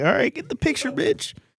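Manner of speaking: acted-out, impatient, breathy whispered grumble. Commenting on an old family photo, retelling own impatient thoughts. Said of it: "I'm like".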